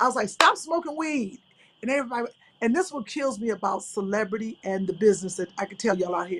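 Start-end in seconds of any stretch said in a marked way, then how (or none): 0.3-1.4 mock, raised, scolding auntie yell. Retelling yelling at a man at a celebrity event, retelling a scolding yell. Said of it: "I was yelling at him like a straight auntie".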